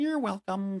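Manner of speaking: put-on high, eerie, creepy little girl voice. Retelling a ghost's answer to being thanked, creepy little girl voice. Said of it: "But in like that little girl, like, yeah, the creepy voice".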